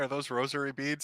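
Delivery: mock crying, put-on crying voice. Imagining a scene and voicing Alice: imitating Alice crying. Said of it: "I could just hear Alice crying".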